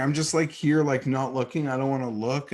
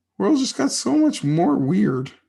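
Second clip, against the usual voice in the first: cracking, pitched-up raised voice breaking mid-line; 7 semitones higher, 5 dB louder than usual. Talking to listeners about fast food and the world, voice cracking. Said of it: "And my voice is cracking".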